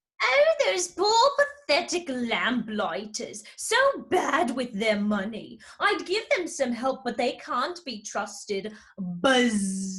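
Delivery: mocking bee voice with long, drawn-out buzz. Mocking how the Hive sees lamplighters: mocking bumblebee tone. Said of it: "[name] changes to a mocking bumblebee tone".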